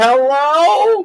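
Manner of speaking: very high, stretched-out, drawn-out yell. Retelling falling off a chair and calling out to the others: imitating own past yell. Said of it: "me yelling".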